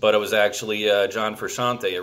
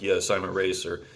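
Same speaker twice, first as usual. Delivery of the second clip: put-on dry deadpan voice, quieter; 2 semitones lower, 4 dB quieter than usual. Retelling a movie scene, answering a woman: dry Vincent Gallo delivery. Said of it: "very dry Vincent Gallo responses".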